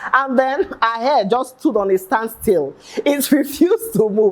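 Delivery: talking through laughter. Retelling a story someone shared online, laughing while talking. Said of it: "I'm sorry, I'm laughing".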